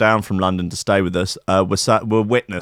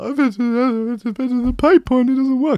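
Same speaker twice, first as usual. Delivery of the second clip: put-on crying, sobbing through words, much higher. Retelling a talk with a man about getting a new key, imitating own crying. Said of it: "I start to cry".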